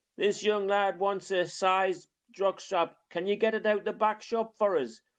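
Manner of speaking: put-on very high, loud, carrying hollered shout. Retelling how a shop assistant called across the shop: imitating a man shouting across a shop. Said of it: "He shouted from one end of the shop".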